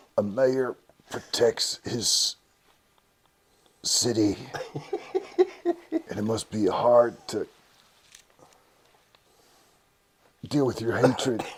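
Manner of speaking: slow, affected, strained put-on voice. Imitating a man who can't talk in a regular voice: strained, constipated-sounding voice. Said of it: "he just can't talk in a regular voice. He sounds like he's constipated".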